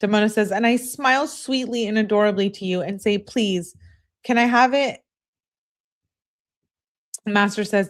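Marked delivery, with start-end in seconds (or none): none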